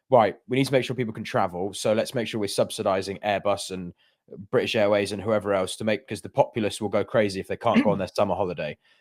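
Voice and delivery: ordinary talk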